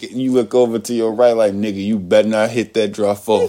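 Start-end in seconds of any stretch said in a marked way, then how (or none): none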